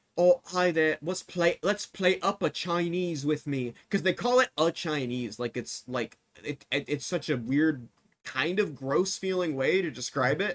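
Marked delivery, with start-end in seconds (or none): 0.2-3.8 British on-camera vlogger-style voice. Mocking how food vloggers in these videos open: imitating British food vloggers. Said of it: "every single one of these videos is they go".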